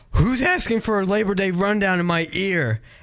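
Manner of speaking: put-on high-pitched scream.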